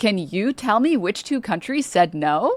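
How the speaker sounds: put-on high, swooping, sing-song kids'-show voice. Reading a meme aloud, then asking in Dora the Explorer voice. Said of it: "in the Dora the Explorer voice".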